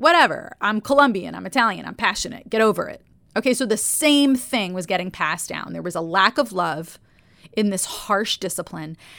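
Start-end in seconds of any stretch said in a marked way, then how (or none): 0.0-3.0 put-on possible New Jersey accent. Retelling what she would have said back as an adult, in maybe a Jersey accent. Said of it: "maybe Jersey accent".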